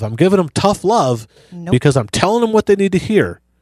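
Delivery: heavy, tongue-in-cheek sarcasm in a high put-on tone. Speaker mimics someone who justifies harsh words as tough love: mock sarcastic tone. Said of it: "I say that in a sarcastic tone of voice".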